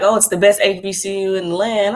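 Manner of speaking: ordinary delivery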